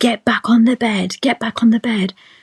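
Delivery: acted, frantic, high-pitched, repeated words in a wild woman's voice. Retelling a birth where the midwife screamed orders: imitating a midwife screaming. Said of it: "the lady just started screaming at me".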